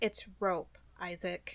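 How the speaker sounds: quiet, flat, bone-dry deadpan delivery. Recapping a scene where Isaac asks what the rope does, mimicking Elita's deadpan.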